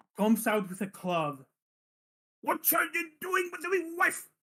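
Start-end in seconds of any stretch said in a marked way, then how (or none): 2.5-4.3 put-on very high, angry, sloshed old man bellowing. Voicing an old man who comes out with a club: angry drunk old man voice. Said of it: "a very drunk-looking old man".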